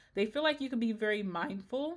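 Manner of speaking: voice cracking and breaking as it goes. Speaker tells the listener how others see them, voice cracking. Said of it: "my voice is cracking".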